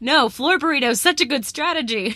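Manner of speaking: small, insistent half-yell. Retelling what Justin said during the lava game: imitating Justin yelling. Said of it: "And you're yelling".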